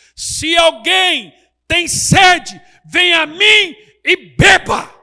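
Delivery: booming, very loud, high-pitched cry. Retelling Jesus crying out to Jerusalem so it hears his voice: retelling a loud shout. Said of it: "Então Jesus dá um berro".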